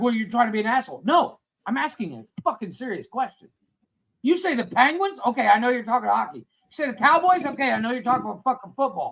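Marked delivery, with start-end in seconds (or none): 0.0-1.0 put-on angry voice. Retelling how someone replied to a question, imitating someone getting mad. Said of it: "and he got all mad".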